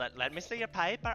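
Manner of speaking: failed put-on Irish accent. A dm voices a character asking to see a paper: failed irish accent attempt. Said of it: "I can't do it".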